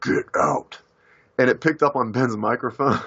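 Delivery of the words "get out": really deep voice, dropped right down low. Retelling speaking to a witness about ghosts: really deep voice. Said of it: "I said with a really deep voice".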